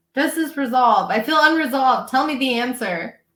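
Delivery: upset, passionate, agitated, worked-up outburst. Speaker pressing the other speaker about an unresolved case, yelling. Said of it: "Sorry, I'm yelling".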